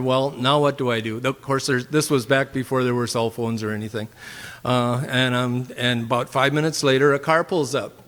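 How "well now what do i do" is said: ordinary delivery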